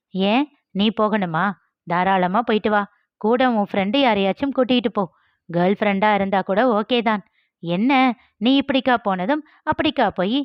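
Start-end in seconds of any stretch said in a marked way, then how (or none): none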